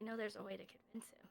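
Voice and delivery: very quiet, hushed voice. Saying something so only Azrael can hear; speaking quietly. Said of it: "I'm gonna say this quietly".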